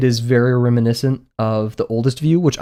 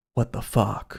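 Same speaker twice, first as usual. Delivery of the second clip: hushed whisper under the breath; 2 semitones lower, 9 dB quieter than usual. Retelling a moviegoer's reaction during the film: imitating a muttered curse. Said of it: "under his breath".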